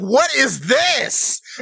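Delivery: panicky, drawn-out high cry. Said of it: "Blackbeard's freaking out".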